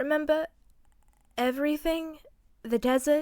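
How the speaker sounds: haunting voice holding back tears. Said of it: "He asked, voice haunting and choked with held-back tears".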